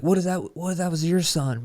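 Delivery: high-pitched yell. Retelling what the cyclist who hit the car kept shouting, imitating someone yelling. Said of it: "He kept yelling at us".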